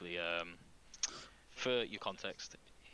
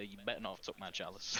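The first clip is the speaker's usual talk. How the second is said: ordinary delivery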